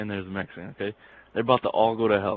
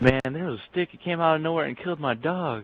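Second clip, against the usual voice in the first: play-acted, high, all-out sobbing little-girl voice; 7 semitones higher than usual. Retelling a joke, voicing a little girl: imitating a crying little girl. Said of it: "And just crying, just, like, all out bawling".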